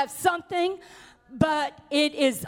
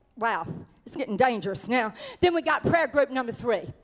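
usual speaking voice

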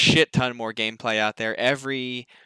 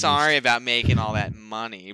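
mock-sarcastic, apologetic tone. Mocking the guy on stage apologizing about Battlefront, in a mock-sarcastic apology. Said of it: "very sarcastically, apologizing".

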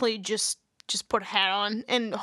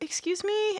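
very high-pitched, squeaky, uneasy and polite; 10 semitones higher than usual. Retelling asking a stranger to repeat himself: imitating own high-pitched voice. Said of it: "voice got real high-pitched 'cause I was uncomfortable".

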